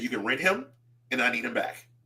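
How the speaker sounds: deadpan, straight-faced delivery. Retelling what a woman told him today, retelling a deadpan remark. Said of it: "she said it with a straight face".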